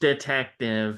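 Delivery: silly put-on text-to-speech computer voice. Describing the new Jigsaw puppet's voice, silly computer voice. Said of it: "this silly computer voice".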